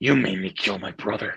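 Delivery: low, threatening, menacing voice. Explaining how the line really has to be said: menacing voice. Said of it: "You actually have to say it like um in a menacing voice".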